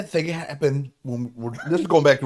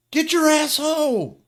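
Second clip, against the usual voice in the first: mock shrill, furious, very high shouted yell; 13 semitones higher, 3 dB louder than usual. Retelling how a neighbor yelled for her nephew: imitating someone yelling a name. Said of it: "they're yelling to him".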